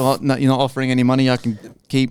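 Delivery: ordinary delivery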